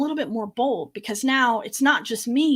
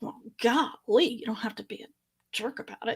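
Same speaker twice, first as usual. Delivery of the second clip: put-on muttering, quieter; 6 dB quieter than usual. Retelling a remark about a security guard: imitating muttering under breath. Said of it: "I mutter under my breath".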